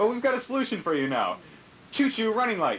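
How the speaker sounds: shouted infomercial sales pitch.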